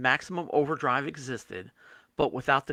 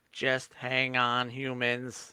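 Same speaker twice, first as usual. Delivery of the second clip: monotone, flat, very slow robot machine voice. Retelling a movie's ending, quoting the machine in a robot voice. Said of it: "a robot voice just saying".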